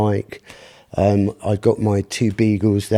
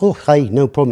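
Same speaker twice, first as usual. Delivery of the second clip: put-on, laid-on Scottish accent, pitched up; 5 semitones higher than usual. Retelling what a scottish man replied when asked about playing tunes; scottish accent. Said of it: "I apologise for the Scottish accent".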